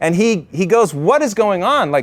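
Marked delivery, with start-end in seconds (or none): 0.9-1.9 high, furious, play-acted indignant outrage. Retelling how General Ridgway reacted to retreating troops: pissed-off General Ridgway, imitated. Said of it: "He was pissed".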